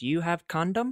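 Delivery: put-on strong Korean accent. Retelling what a woman at a dance asked: heavy korean accent. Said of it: "She had a very heavy Korean accent".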